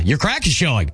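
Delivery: sarcastic, sardonic delivery. Asked to try being sarcastic, the speaker attempts it: sarcastic tone. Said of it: "pretty sarcastic".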